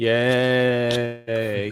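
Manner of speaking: deadpan, flat, drawn-out sarcastic "yay". Reacting to news of next week's card support: sarcastic unexcited yay. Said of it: "Can you tell how excited I am from the sound of my voice?".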